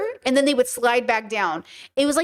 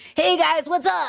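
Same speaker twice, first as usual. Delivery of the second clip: put-on very elderly voice; 3 semitones higher than usual. Imagining a stream decades from now, as ninety-year-old [name], old people voice. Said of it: "That's my old people voice".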